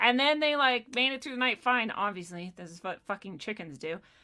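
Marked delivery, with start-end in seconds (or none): none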